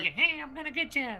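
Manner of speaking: very high, menacing killer-doll voice. Asked for a Chucky voice before they leave, the speaker gives one: Chucky voice. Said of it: "kind of like".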